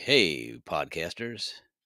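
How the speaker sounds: put-on radio announcer voice. Showing how they can talk like on the radio, in put-on radio announcer voice. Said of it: "talk like you're on the radio".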